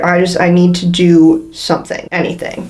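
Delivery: ordinary delivery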